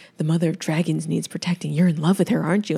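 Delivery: put-on ominous delivery. Retelling a masked woman's words from a show: imitating an ominous line. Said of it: "super ominous".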